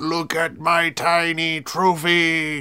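very slow, drawn-out, boastful gloating. Talking with others about what Skusekar will do, imitating Skusekar. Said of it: "He's gonna be like".

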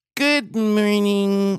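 high, grating voice that runs right through you. Retelling how a woman at Fox Studios always said good morning: imitating a woman's good morning. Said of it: "this is exactly how she said good morning".

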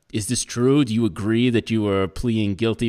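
ordinary delivery

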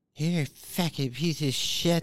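restrained, held-back outburst. Acting out an imagined Alexa answering a user's request, mock-yelling in Amber Heard's voice. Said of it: "yell at me in Amber Heard's voice".

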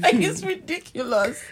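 talking through laughter. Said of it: "I can't stop laughing".

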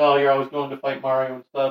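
mock-sad child voice. Retelling a sad video about Bowser's son: acting out a sad kid. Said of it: "and he's all sad. He's like".

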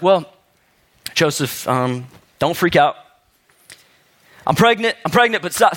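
play-acted voice filling with feeling, welling up. Acting out Mary telling Joseph news: imitating Mary getting emotional. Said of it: "Mary probably starts getting a little bit emotional".

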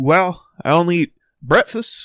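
bad lady voice. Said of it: "that wasn't even a good impression".

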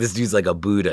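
ordinary talk, nothing marked

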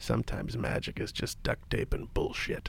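muttered under breath. Retelling what he said after looking at you, muttering under his breath. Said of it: "kind of under his breath".

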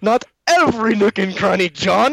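put-on overly dramatic, loud British accent yell, very high. Recounting how an actor delivers a line in a scene, Naveen Andrews British accent. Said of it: "he really pulls out that British accent".

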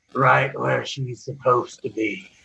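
very low, deep, grave-deep dead man's voice. A questioned corpse answers the one who asked, in Dildek's corpse voice. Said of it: "His corpse says".

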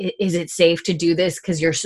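plain

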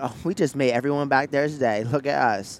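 put-on valley girl voice. Retelling what a woman said, in a Valley Girl voice. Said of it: "in my then Valley Girl voice".

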